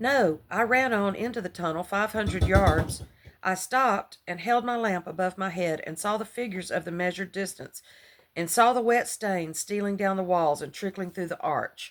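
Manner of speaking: plain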